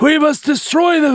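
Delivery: put-on old man voice, pitched very high. Imitating how an english actor with a mustache talks, in an old man's voice. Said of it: "like he's some like old man".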